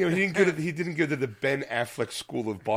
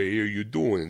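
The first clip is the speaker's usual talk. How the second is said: put-on Philadelphia accent, much lower; 6 semitones lower than usual. Showing how everyone thinks people talk in Philly, in a Sylvester Stallone voice. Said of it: "when you watch a Sylvester Stallone movie, he goes".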